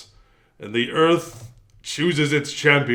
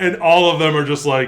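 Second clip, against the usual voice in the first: plain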